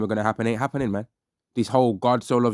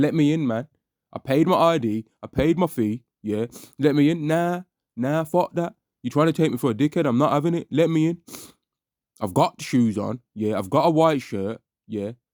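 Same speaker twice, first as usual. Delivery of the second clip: put-on drunkard voice, begging, pleading insistence; 4 semitones higher than usual. Mocking a man who sounds like a drunk trying to get into a club, imitating a drunk. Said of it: "He sounds like a damn drunkard".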